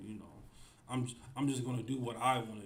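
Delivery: normal talking voice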